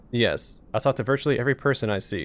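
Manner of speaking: ordinary talk, nothing marked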